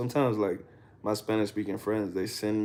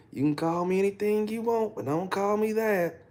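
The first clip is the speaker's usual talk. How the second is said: put-on high-pitched country accent, laid on thick; 11 semitones higher than usual. Retelling a clip friends sent of a man on a boat, in a country accent. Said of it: "He's country as hell".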